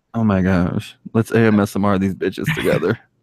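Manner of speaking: put-on low, creepy man voice. Joking around with another speaker, in a creepy guy voice. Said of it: "This is my creepy guy voice".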